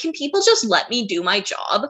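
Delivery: mock, thoroughly exasperated, fed-up, annoyed tone. Retelling a quote from the chief of police: imitating annoyed Chief McCrae. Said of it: "He just sounds so annoyed".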